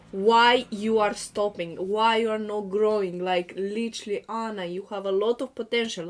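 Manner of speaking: plain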